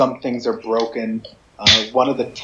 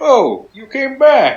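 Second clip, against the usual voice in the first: shrill, drawn-out, very high and loud, shocked; 13 semitones higher, 9 dB louder than usual. Voicing a character who opens the door to returning visitors: shocked. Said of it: "looks very shocked to see you".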